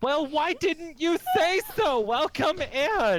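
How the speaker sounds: put-on very high, loud, chirpy valley-girl voice. A man opens his door to visitors who claim to be customers, male Valley Girl accent. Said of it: "The man has what would now be considered DID, / You see this man here, / It sounded like the Valley Girl accent, but for a male".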